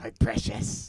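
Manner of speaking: loud, raspy voice. Speaker joins friends doing impressions together: Gollum voice. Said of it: "Unless you guys want to do Gollum imitations too".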